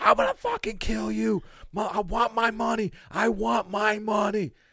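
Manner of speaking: very high, drawn-out screaming. Retelling a stranger on the street with a phone: imitating someone screaming.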